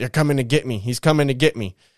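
normal talking voice

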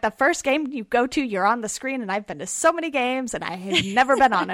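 put-on annoyed, mad, indignant griping. Retelling a friend's complaint about being on the big screen: imitating a mad friend. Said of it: "my friend was so mad".

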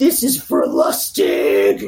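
very low, slow, menacing, scary voice. Retelling what an attacker said with a gun: imitating a low, scary voice. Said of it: "in a really low, scary voice".

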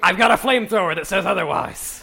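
put-on orc monster voice. Voicing the orc Scorch, answering the butler about the cred stick, orc voice. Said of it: "the orc's voice".

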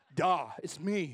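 put-on loud teenage voice dropped an octave deep. A parent retelling hearing their 13-year-old's changed voice: imitating the teen's deep voice. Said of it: "I hear a voice".

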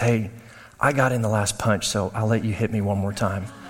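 very low, secretive half-whisper. Retelling what his sister said to him in the car, retelling a half-whisper. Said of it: "my sister leans over to me and whispers".

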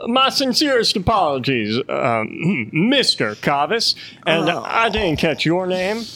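high, swooping ship-captain voice, echoing from above. Voicing a captain speaking down to the ship: Deadbeat Dick's voice. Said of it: "you hear his voice again".

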